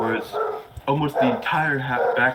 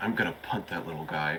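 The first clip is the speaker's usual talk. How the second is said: low, hushed half-whispered aside under the breath; 6 semitones lower, 9 dB quieter than usual. Speaker voicing Valkyria, who turns around; Valkyria half-whispering under breath. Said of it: "whispers under her breath".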